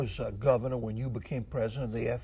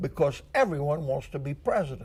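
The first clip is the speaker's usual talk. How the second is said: ordinary talk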